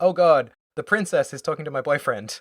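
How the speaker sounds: frightened, alarmed, terrified outburst. Retelling a character spotting her boyfriend with the princess: imitating a terrified character. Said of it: "immediately has a terrified look on her face".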